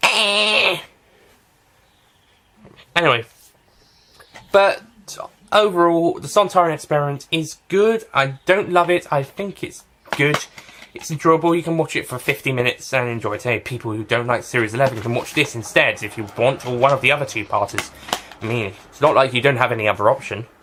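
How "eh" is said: high bird squawk impression. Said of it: "It's going".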